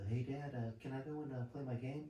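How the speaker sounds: put-on sweet, high, all-innocent little kid voice. Retelling a son asking his dad to play a game: imitating an innocent kid. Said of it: "all innocent and shit".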